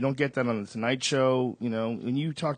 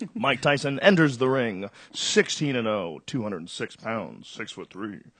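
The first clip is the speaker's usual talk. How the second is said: cartoon-style TV sports announcer voice. Asked to do a sportscaster voice, announcing a fighter entering the ring: sportscaster voice. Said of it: "The sportscaster voice would be like like that".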